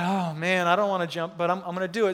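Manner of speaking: ordinary delivery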